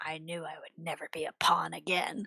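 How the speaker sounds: quiet mutter under breath. Voicing a character's dark aside to herself: muttering under breath. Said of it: "you hear her mutter under her breath".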